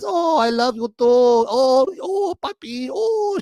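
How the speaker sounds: sudden put-on Spanish accent, very high, very drawn out.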